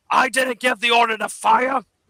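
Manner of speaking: very high, gruff, shouting dwarf voice. A dwarf shouts to the rest of the dwarves, in a gruff dwarf voice, shouting. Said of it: "a gruff dwarf voice you know shouting".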